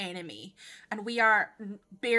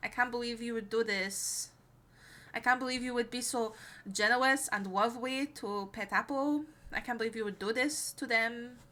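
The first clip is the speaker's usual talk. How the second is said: put-on Eastern European accent in a character voice; 4 dB quieter than usual. Thanking a gifter in a put-on voice: Melora voice with Eastern European accent. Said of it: "I'm going to say it in this voice".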